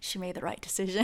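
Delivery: wry aside, very soft and fast.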